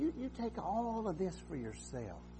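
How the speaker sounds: high, soft, coaxing put-on devil voice.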